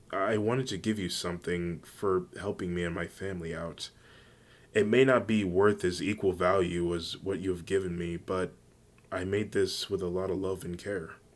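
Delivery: ordinary delivery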